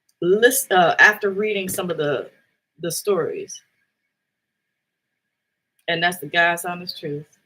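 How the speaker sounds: voice holding back tears. Speaker after reading the stories, holding back tears. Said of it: "I'm trying to hold it together right now".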